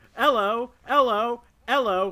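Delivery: put-on very high, loud, belted British accent. Recreating the Family Guy bit about being Henry the Eighth, as Ben Affleck doing an impression. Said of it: "impression of Ben Affleck doing an impression".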